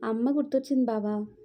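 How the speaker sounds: plain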